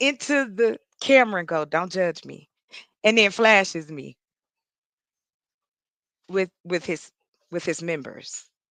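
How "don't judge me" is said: soft, hushed half-whisper under the breath. Retelling what an online dating match said into the camera: imitating a half-whisper. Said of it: "he whispers in".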